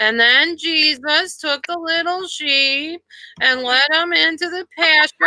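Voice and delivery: put-on high, dull, lifeless old-fashioned schoolmarm voice. Imitating the boring teacher who replaced the speaker: imitating an old-fashioned school marm. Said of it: "one of those real old-fashioned school marms".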